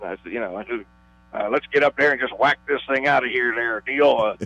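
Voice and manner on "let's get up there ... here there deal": put-on old-time baseball announcer voice, veteran broadcaster style. Retelling a radio call before a pitch: Bob Prince impersonation. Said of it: "I kinda went into a Bob Prince impersonation".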